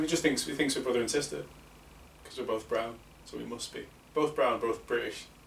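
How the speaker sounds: ordinary delivery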